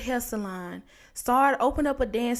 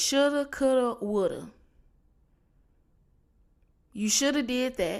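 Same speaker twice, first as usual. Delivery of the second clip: scolding, lecturing mama voice. Speaker urging listeners to do the work now, imitating mom's voice. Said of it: "In my mama voice".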